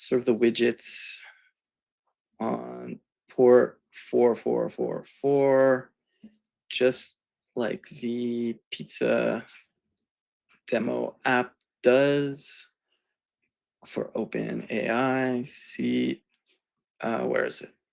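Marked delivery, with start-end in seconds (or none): 0.0-15.4 very slow, deliberate, word by word. Explaining a project setup step aloud while working: talking very slowly. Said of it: "I'm talking very slowly".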